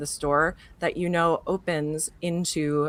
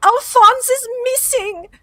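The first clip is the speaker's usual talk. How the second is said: much higher, louder put-on old-woman voice; 10 dB louder than usual. Describing Nana Wilkes running in and quoting her: imitating worried Nana Wilkes. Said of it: "got concern all over her face".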